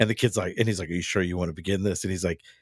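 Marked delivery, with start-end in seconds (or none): 0.9-2.0 put-on super serious voice. Retelling a dad's line from Malcolm in the Middle: Bryan Cranston's super serious tone. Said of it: "gets super serious and says".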